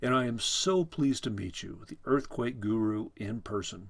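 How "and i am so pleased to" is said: plain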